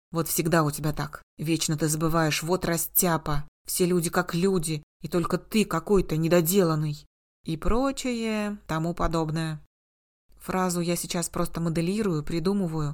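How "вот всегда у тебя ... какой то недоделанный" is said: ordinary talk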